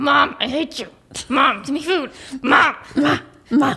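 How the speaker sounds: snotty, rude, spoiled bratty dog voice. Voicing the dog Lily as a rude talking animal: bratty dog voice. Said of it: "She's such a brat".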